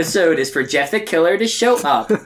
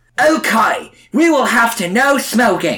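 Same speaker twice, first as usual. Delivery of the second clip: words mangled, pitched up; 5 semitones higher than usual. Reading George Pig's line from a script aloud: George Pig who can't talk properly. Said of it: "George can't talk properly".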